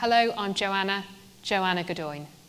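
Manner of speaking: pause between first and repeated "joanna". Showing a James Bond style introduction with the first name: pause before repeating "Joanna". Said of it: "repeat your first name with a pause in the middle".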